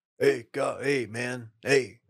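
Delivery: laid-back, mellow, easygoing voice. Joking with the others about a Meeting of the Titans, speak in a Joe impression. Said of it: "That's a good Joe".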